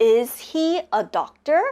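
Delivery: pitch climbing upward on "doctor". Demonstrating intonation for learners, with rising question intonation. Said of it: "the intonation goes up".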